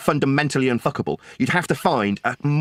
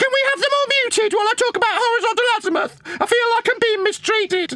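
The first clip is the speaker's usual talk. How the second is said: put-on little girly voice, very high pitched. Mocking a chatter who kept muting, in a girly Buck impression. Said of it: "should I do a little girly Buck impression?".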